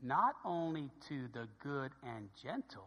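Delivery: very quiet, slow, deliberate reading. Reading a passage aloud after flagging the next part: reading slowly. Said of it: "I'm going to read it slow".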